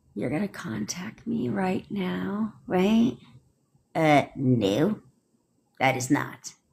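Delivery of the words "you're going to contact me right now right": soft, timid, unsure delivery. Showing how not to give a command: mock timid asking tone. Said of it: "they're not like".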